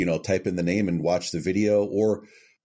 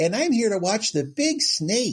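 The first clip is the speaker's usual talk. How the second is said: put-on very high voice of a five-year-old kid; 14 semitones higher than usual. Recreating the speaker's line for a commercial, in a five-year-old kid's voice. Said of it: "And that's about how it sounded".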